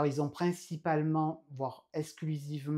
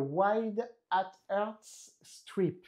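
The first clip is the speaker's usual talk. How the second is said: English words in a French accent; 5 semitones higher than usual. French speaker naming an item in English, apologizing for their own accent. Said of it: "excusez-moi pour mon accent anglais".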